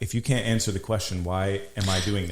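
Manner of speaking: plain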